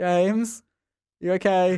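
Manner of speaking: high-pitched, worried, concerned calling voice. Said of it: "I heard the director be like".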